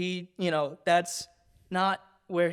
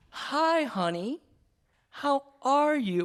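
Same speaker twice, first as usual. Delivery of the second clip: put-on very slow, high, patronizing, talking down as to a child; 8 semitones higher than usual. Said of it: "they talk so slow".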